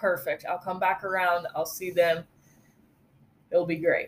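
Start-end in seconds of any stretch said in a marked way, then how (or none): none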